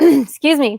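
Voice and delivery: emotional catch in voice.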